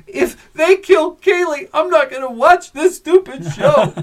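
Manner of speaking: play-acted tearful weeping wail, very high and loud. Retelling watching a character get shot: retelling own past weeping.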